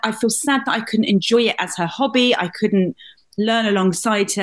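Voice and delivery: normal talking voice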